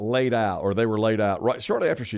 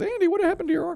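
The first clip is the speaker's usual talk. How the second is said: squeaky, very high-pitched put-on voice. Speaker retelling a scene with Andy, Aunt B impression. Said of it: "I loved your impression of Aunt B".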